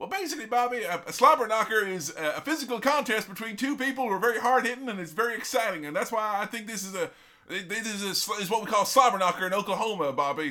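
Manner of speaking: stumbling, halting delivery. Retelling how a commentator explained a word, young Jim Ross impression. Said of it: "heard the young Jim Ross be like".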